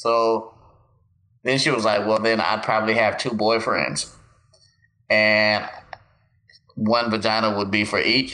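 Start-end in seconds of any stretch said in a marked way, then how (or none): none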